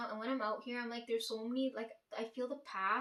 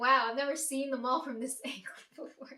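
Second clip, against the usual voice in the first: play-acted, loud, all-excited exclaiming; 2 semitones higher, 7 dB louder than usual. Retelling a woman's remark on reaching the mall, imitating someone excited. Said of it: "she's all excited".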